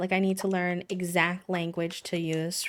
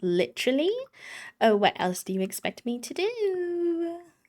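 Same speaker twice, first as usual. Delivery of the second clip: very high, swooping, bad put-on valley girl voice; 11 semitones higher than usual. Speaker retells her own reply to them in a bad Valley Girl impression. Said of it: "It's my bad Valley Girl impression".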